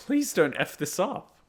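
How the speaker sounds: earnest pleading. Telling the others about the remake, begging: begging. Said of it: "I'm honestly begging".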